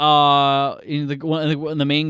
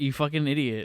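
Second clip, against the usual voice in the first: put-on annoyed villain voice, quieter; 6 dB quieter than usual. The speaker acts out the villain as Bond sits down, imitating an annoyed villain. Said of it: "he's like so annoyed with Bond".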